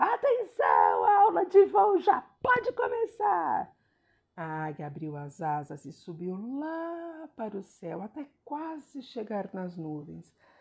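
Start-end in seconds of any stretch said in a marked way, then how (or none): 0.0-3.7 very loud, very high, shrill swooping shout. Narrator reading an eagle calling out to the turtle on its back, shouted. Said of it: "Depois gritou assim".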